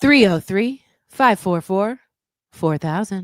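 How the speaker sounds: put-on female robot voice, robotic. Reading out a phone number on request: put-on fembot voice. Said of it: "You sounded a little bit like a fembot".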